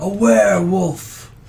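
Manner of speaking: loud, high yelling priest voice.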